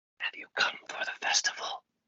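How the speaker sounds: quiet, muffled whisper. Telling a story where a voice speaks through a cracked door, whispering. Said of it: "a voice like starts to whisper through the crack".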